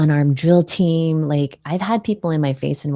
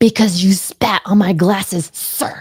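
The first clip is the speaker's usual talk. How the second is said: bellowed, loud, drawn-out yell; 4 semitones higher, 3 dB louder than usual. Retelling answering a drill sergeant in formation: imitating own loud yell. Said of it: "I yelled it so loud".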